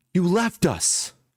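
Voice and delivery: piercing, shrill, very high cutting scream. Voicing a character who turns to both players: screaming. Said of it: "she just screams".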